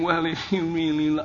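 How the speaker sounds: put-on whiny female voice. Giving advice to men, the speaker acts out a woman whining, imitating her whining. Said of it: "if she starts whining and saying".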